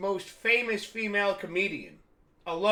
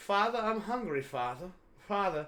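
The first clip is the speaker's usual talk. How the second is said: put-on British accent; 4 dB quieter than usual. Showing off a voice being worked on, a little British father: British accent. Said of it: "a little Brit- British father".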